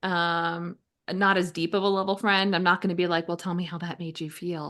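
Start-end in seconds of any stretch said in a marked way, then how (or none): 3.3-4.7 creepy soothing therapist-like voice. Joking about probing a casual friend: therapist-y creepy voice. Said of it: "that therapist-y, creepy voice".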